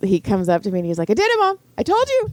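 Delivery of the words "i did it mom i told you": put-on very high, loud, thrilled kid-like yelling. Retelling the son's reaction after passing the permit test: imitating a loud excited shout. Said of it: "And he's so loud".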